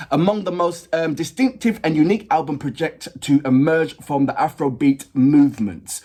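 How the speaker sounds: usual speaking voice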